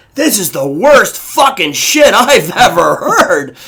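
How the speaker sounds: loud, carrying, rude behind-the-hand aside. Retelling a nearby woman's comment at a show: imitating a loud aside. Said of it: "mouth cupped by her hand, but very loud".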